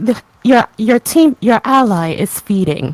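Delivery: loud, salty, snarky announcer voice with attitude. Acting out a game announcer scolding a team: salty game announcer voice. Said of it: "have a really salty announcer".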